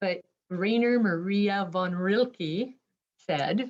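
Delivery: very slow, careful, deliberately sounded-out pronunciation. Pronouncing a poet's name they don't pronounce well, saying it really slowly. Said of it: "I have to say it really slowly".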